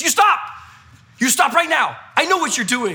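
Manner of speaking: put-on stern commanding yell in broken English. Retelling a woman catching a masked teen stealing a bike, imitating her shouting. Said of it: "she shouts out".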